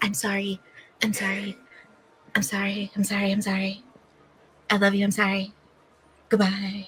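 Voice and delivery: soft half-whispering, said over and over. Playing a character who leaves while repeating apologies: half-whispering apologies.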